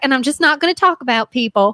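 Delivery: put-on country twang. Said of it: "your [name], Lil Twang".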